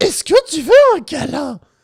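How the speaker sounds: very high, very loud, squeaky squirrel voice. Joking with friends, asking for a hug in Kailou's squirrel voice. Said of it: "c'est la voix de Kailou en mode-".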